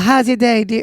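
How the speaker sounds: put-on Southern accent in a woman's voice. Imitating a company phone agent greeting a caller: imitating a Southern lady. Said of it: "that Southern lady just like".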